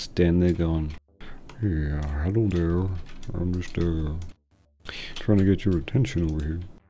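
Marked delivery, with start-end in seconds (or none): 1.6-6.6 mumbled under the breath, hard to make out. Retelling trying to get someone's attention, mumbling. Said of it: "you bloody mumbling idiot".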